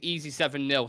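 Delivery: normal talking voice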